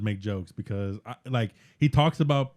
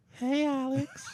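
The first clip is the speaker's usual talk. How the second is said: put-on high, soft girly voice. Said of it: "What's your girl, girl voice?".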